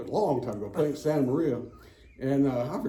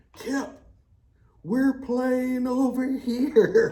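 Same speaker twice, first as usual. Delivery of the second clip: shrill, very high-pitched, long drawn-out screaming; 10 semitones higher, 4 dB louder than usual. Retelling golf partners calling from the green: imitating guys screaming. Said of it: "these guys on the green started screaming".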